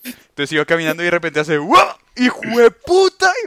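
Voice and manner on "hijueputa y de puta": loud, drawn-out, swooping shout across a room. Retelling how someone in the cinema dropped their popcorn, retelling a very loud shout. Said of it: "Pero gritó, y de puta, re duro".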